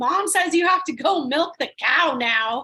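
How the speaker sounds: full-on high, loud screaming. Speaker retells a kid's brother coming on stage mid-show, imitating someone screaming. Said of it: "and starts screaming".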